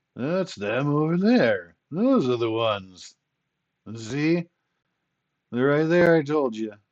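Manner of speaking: put-on loud, high, slurred drunken talk. Narrating a game scene, voicing Damianos pointing out soldiers, slurring his words. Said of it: "you hear Damianos slurring his words".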